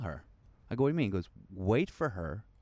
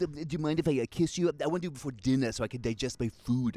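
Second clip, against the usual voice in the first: put-on neurotic New York accent, higher pitch; 5 semitones higher than usual. Acting out asking a woman for a kiss: Woody Allen impression. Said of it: "Woody Allen".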